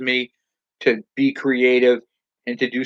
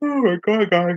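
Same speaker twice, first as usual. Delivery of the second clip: talking through a yawn, higher pitch; 7 semitones higher than usual. Talking to viewers about a bike, yawning while talking. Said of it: "I can't stop yawning".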